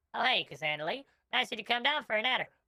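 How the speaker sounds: put-on high-pitched gnome voice. Playing a gnome who greets Cassandra, in a high gnome voice. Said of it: "this voice is maybe slightly, slightly too high".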